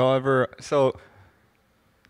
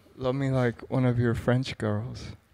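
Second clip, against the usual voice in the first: ordinary talk, nothing marked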